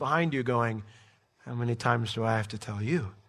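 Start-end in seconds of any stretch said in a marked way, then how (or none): 1.4-3.1 low, soft, gracious, gentle voice. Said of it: "that gracious, gentle voice".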